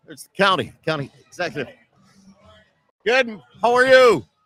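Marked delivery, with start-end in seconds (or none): 3.0-4.2 shouting. Greeting someone passing by at a parade, yelling into the microphone. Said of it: "I'm yelling into the microphone".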